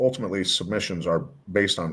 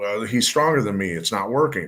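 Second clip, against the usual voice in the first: plain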